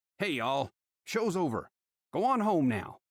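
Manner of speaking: snapped, fed-up tone. A sheriff tells staring neighbors to go home, snapping. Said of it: "A small town sheriff is hiding his family's secret. / his cuffs already out".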